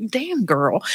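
put-on hushed, low Southern accent stage whisper. Retelling what a colleague half-whispered beside the speaker: imitating a low southern half-whisper. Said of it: "She just whispered it real low with that Southern "damn,"".

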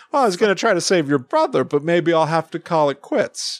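words carried on an acted laugh, chuckling voice. Describing how a man always talks, doing his voice with a laugh in it. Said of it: "he always talks like that".

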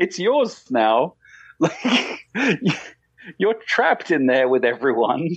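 high voice, words broken up by laughter. Explaining something to another speaker, laughing while talking. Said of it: "I don't know why I'm laughing".

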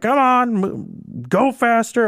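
very high, very slow, scolding commander voice. Retelling a show where the commander hurries the crew, in a commander voice. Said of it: "I can't do a commander voice".

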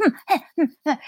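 high, loud, cute little noises.

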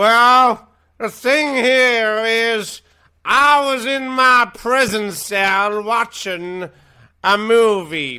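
very high, very loud, booming, drawn-out, deliberate put-on voice. Playing a fake tape of a speech to reporters: Bill Cosby voice. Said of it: "Mister Cosby".

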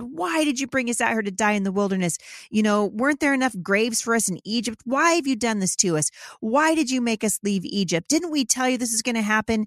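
play-acted whiny, grumbling, griping complaining voice. Retelling the Israelites complaining to Moses: imitating whining complaints. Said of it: "whining and complaining".

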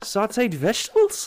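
mock silly Scottish brogue.

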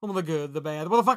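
garbled, barely intelligible patter, every word mashed together. Reading the podcast's closing tagline, trying to be the Micro Machines guy. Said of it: "Trying to be the Micro Machines guy".

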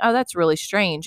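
ordinary talk, nothing marked

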